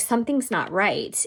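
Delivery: normal talking voice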